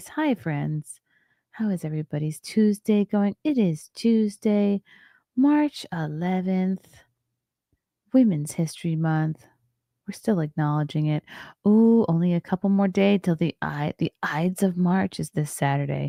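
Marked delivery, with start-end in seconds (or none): 0.1-9.4 calm, soothing nighttime voice. Greeting everybody on a Tuesday evening, in a soothing nighttime voice. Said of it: "Should I do my soothing morning voice or a soothing nighttime voice?".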